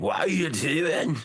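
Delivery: put-on very high, squeaky voice, thick Irish accent. Imitating a wrestler asking Finn Balor a question: thick Irish accent, imitating JD McDonough. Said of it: "J D's accent here is just thick".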